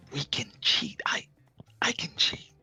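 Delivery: whispered in a character voice. Playing a character who whispers in another character's ear: whispering in character. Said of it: "I whisper in her ear".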